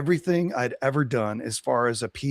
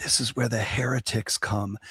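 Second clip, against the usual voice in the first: hushed, confiding, secretive whisper; 3 dB quieter than usual. Retelling what a conference speaker whispered: imitating a whisper. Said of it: "and he leaned in and he whispered".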